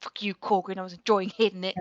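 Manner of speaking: low, muttered half-whisper under the breath. Tabletop player speaking in character after taking the dodge action: half-whispered under breath. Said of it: "Just whisper under my breath".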